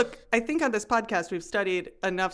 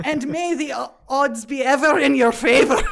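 very loud, raging, angry Scottish accent; 6 semitones higher, 9 dB louder than usual. Showing the group how to say a line, in an angry scottish accent. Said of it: "that's what a Scottish accent is".

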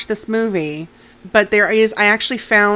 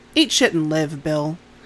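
put-on deadpan delivery, lower pitch; 4 semitones lower than usual. Retelling a story where one kid answers another; retelling a deadpan reply. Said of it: "completely deadpan".

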